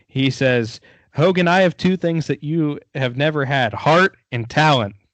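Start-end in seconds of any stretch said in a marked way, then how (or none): none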